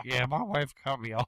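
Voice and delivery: put-on voice. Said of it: "this is how Scotty Caskell".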